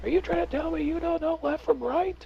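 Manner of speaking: very high, shrill, frustrated screaming. Narrating a frustrated wizard drilling confused archers: screaming at the men. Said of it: "starts screaming at the men".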